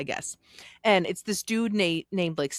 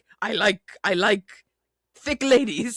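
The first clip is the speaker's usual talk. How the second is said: loud, emphatic, outright delivery; 4 semitones higher, 5 dB louder than usual. Retelling what a man in a documentary said: imitating Stefan. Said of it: "Stefan being like".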